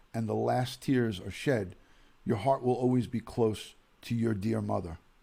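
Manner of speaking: normal talking voice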